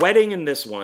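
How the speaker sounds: ordinary talk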